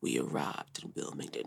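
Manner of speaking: deep, sexy, whispered radio-host voice. Speaker retells him announcing their arrival in Wilmington, imitating sexy deep radio-host voice. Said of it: "speaking in this like super sexy radio host deep voice".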